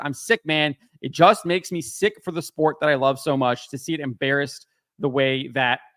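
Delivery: ordinary talk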